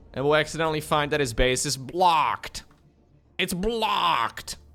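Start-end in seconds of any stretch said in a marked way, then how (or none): 3.4-4.6 American game announcer voice-pack style delivery. A game caster, commentating a match, does an american voice pack impression. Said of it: "That's my impression of the American voice pack".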